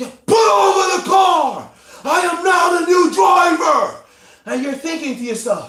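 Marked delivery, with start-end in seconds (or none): 0.0-4.0 very loud, high, slow, deliberate yell. Describing a voice that suddenly takes over on the highway: acting out its yelling. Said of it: "this voice starts yelling at you".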